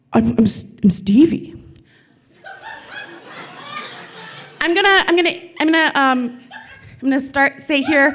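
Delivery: dim, stammering tough-guy voice, high and swooping. Quoting a man's reply when asked who he was, in a dumb thug voice. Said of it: "it's my dumb thug voice".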